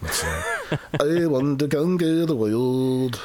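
put-on Irish balladeer accent, slow and drawn out. Showing off an Irish accent on a line, put-on Irish accent. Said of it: "That's my Irish accent, brother".

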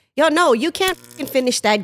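imitated mean, cutting tone of voice. Acting out what one might say to a spouse: imitating saying something mean. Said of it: "if I said something really mean".

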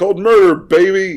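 very loud, high, outraged yell, stretched out. Showing how to say the film title aloud: outraged George Costanza voice. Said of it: "You gotta say it like George Costanza".

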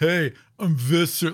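put-on thick-headed villain voice. Describing how the audiobook narrator voices Visser, thick-headed Visser 3 voice. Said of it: "He's this thick-headed".

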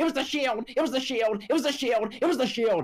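high repeated announcer scream. Retelling the commentary after a wrestler crashed through the table: imitating Michael Cole screaming. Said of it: "Michael Cole is screaming".

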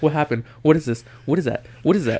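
mocking nagging voice. Mimicking a friend's questions during a movie: mocking imitation of constant questioning. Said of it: "it's like every five minutes".

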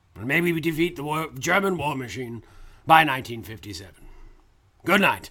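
put-on British wartime leader voice, imitated. Doing a bit as a wartime prime minister signing off: Winston Churchill impression. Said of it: "that was an amazing impression".

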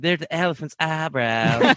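put-on southern American drawl. Asked to quote a show's line with the accent, in a southern accent. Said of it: "can you say it with the accent".

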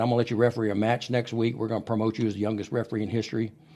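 ordinary talk, nothing marked

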